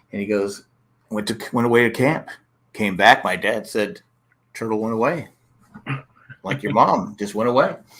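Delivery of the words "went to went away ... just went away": put-on deadpan comedian style delivery. Retelling a comedian's bit about a pet turtle: imitating a deadpan comedian. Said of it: "he's deadpan".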